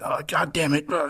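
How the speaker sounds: put-on exasperated, furious, high yelp. Retelling how the guide screamed over his engine: imitating someone screaming angrily. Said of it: "you could just hear him over his engine screaming".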